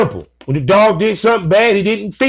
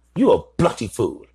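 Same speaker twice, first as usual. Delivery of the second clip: terrible fake English accent, very low pitch; 10 semitones lower, 5 dB quieter than usual. Trying to make it funny for listeners, delivering a line in a terrible English accent. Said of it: "I'm sorry for the terrible English accent".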